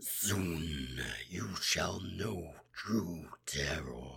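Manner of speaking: rumbling baritone dragon voice. A player demonstrates the ancient red dragon from their campaign, deep rumbling dragon voice. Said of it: "That is those deep rumbling baritones".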